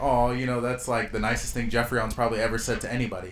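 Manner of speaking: ordinary talk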